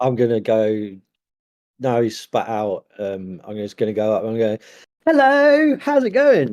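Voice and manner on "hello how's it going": very high, bubbly, swooping, happy, enthusiastic voice. Walking up to greet someone: really enthusiastic, happy. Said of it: "Like really enthusiastic, happy".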